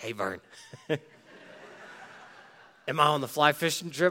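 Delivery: put-on small, hoarse, raspy little boy's voice. Retelling a fishing-loving kid at camp asking a question, in a little raspy voice. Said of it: "he's got this little raspy voice".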